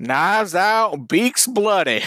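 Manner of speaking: slow, high cartoon rooster voice. Signing off the episode in a Foghorn Leghorn voice. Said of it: "that was my foghorn leghorn".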